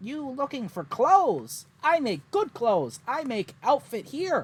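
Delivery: very high-pitched crowlike humanoid creature voice. Speaker voices the tavern chef answering the party, in a Wellspoke Kenku voice. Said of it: "they are a Kenku".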